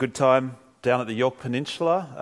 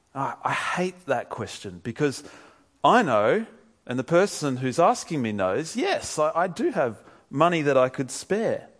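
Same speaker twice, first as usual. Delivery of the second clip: ordinary talk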